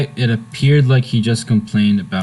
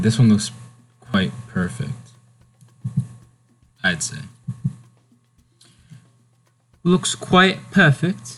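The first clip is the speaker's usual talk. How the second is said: cringey, attempted put-on British accent. Judging a ride in the game in a put-on British accent. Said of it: "my little attempt at a British accent".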